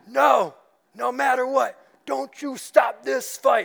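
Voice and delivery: rough raspy yell. Acting out the bloodied fighter answering his trainer, a poor Rocky impression, yelling back. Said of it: "That's a poor Rocky impression".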